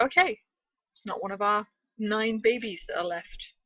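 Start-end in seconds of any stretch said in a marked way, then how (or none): none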